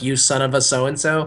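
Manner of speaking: usual speaking voice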